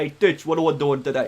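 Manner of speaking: loud put-on New York accent. Asked to do a Mafia accent, trying a second one: New York accent. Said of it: "Those are New York accents".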